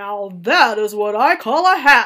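big, deep, very loud booming voice, rising. A narrator reads Bruno's remark as the boy's hat is strapped on, booming deep voice. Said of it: "Bruno boomed in his deep voice".

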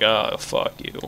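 mock deflated, breathy, let-down whisper. Imitating the game voice that just spoke: imitating a disappointed voice. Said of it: "You sound so disappointed".

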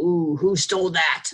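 loud, cross, angry, accusing tone. Asking how the story's characters felt, showing how they said it: acting out a mad way. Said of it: "They said it in kind of a mad way".

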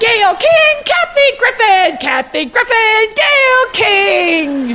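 high, drawn-out, gushing delivery.

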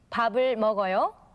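slight rising lift at the end of 먹어요. Teaching korean question intonation, slight rise on final 먹어요. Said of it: "With a voice going up a little bit at the end".

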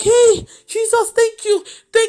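high, overjoyed, joyful yelp. Retelling how she reacted to good news: retelling a happy scream. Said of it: "I was screaming".

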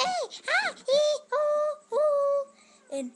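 very high, very slow, loud, drawn-out hollering. Talking about what Andy thinks of Fred, imitating Fred yelling. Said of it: "all he ever does is he yells".

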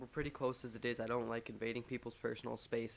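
ordinary delivery

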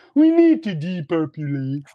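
slow, drawn-out frog puppet voice. Mocking a talk of depopulation, quoting Bill Gates: Bill Gates impression as Kermit the Frog. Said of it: "as Kermit the Frog, Bill Gates would say".

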